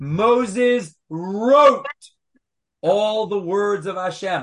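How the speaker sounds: heavy emphasis on the word wrote. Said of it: "I'll put the emphasis on the right syllable".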